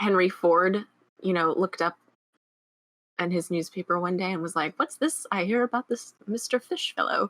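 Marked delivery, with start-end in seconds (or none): 4.8-7.3 put-on old-timey British accent, pitched up. Retelling Henry Ford reading his newspaper one day, Henry Ford in British accent. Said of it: "I just gave him a British accent".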